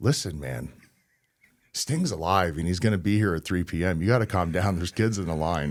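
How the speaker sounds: casual, calm, easygoing, matter-of-fact, talking-down tone. Retelling how Vampiro calmed a crying man, imitating Vampiro speaking casually. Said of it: "he's just speaking very casually".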